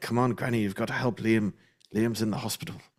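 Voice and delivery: fast, rattled-off put-on Irish accent. Acting out a scammer begging Granny for money, in a Liam Neeson accent. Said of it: "Your Liam Neeson accent's awesome".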